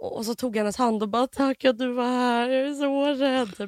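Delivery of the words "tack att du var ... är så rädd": very slow, crying through the words, tearful and frightened. Retelling taking a nurse's hand, acting out crying and scared. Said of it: "då börjar jag gråta".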